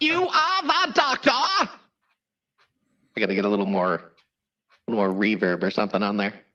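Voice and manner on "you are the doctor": very high, robotic voice. Talking about a professor who isn't a doctor, he slips into Dalek voice. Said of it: "I start slipping into Dalek voice".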